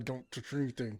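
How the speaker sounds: through clenched teeth. Retelling a warning to the kids before a showing: imitating a warning through clenched teeth. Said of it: "that tone of voice, where you're clenching your teeth".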